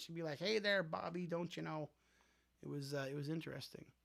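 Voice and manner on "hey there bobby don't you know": put-on thick Minnesota accent, laid on heavily. Recalling the show Bobby's World to Toonie, as Bobby's mom: thick Minnesota accent. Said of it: "She had a thick like Minnesota accent".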